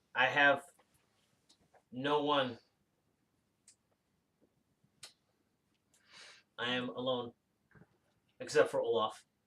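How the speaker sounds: mechanical, machine-like, robotic android voice. Voicing an android character who kept the players' ship, in a robotic android voice. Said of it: "in this robotic android voice".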